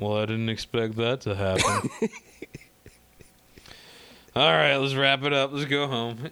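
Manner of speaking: mock bored, indifferent tone. Retelling how the lieutenant reacts to a dead body: imitating an uncaring lieutenant. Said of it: "he just does not give a shit about it at all".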